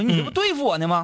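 mock cross teacher voice, angry and high-pitched. Retelling a teacher's reply to a student's remark: imitating an angry teacher. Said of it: "就生气了".

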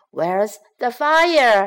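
shouting, the word "fire" drawn out. Reading a children's story aloud, the fireman's line: fireman shouting. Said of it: "shouts a fireman".

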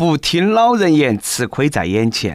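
plain

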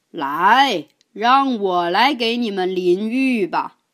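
loud, booming, ringing, resounding voice. Reading a children's story, the whale's sudden call from the bathroom: loud booming voice. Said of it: "响起了一个洪亮的声音".

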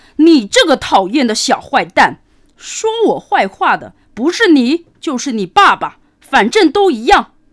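threatening, loud, high-pitched shout. Narrator reads the wolf's line to the lamb as he closes in, shouting loudly. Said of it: "大声嚷道".

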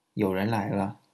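plain

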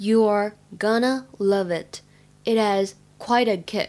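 slow, careful, deliberate reading voice.

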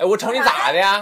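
Northeastern Chinese Dongbei dialect. Showing dialect popular among young men: imitating Dongbei dialect banter. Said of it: "东北流行的方言".

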